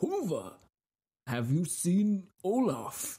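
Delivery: inquisitive Nordic Viking voice. Speaker imagines a Viking on a ship asking his companion something; inquisitive Viking voice. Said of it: "like an inquisitive Viking on a ship".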